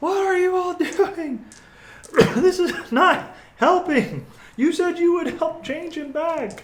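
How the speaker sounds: frantic, manic shrieking at very high pitch. Voicing a priest in a game, screaming at the group: manic screaming. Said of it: "priest is now screaming uh, at the top of his lungs, like manic".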